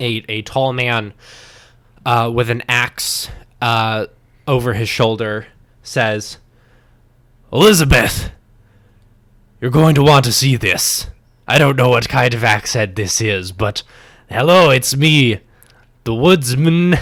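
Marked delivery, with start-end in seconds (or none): 7.5-16.9 put-on pirate-sounding accent. Voicing a woodsman with an axe entering a church: pirate-sounding accent. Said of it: "You're starting to turn into a pirate".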